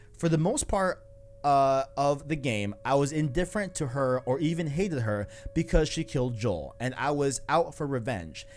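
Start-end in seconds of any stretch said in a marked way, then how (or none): none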